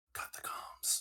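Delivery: hushed whispering. In a tabletop game, a player's character speaks to another character, whispering. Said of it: "I'm gonna whisper to T B".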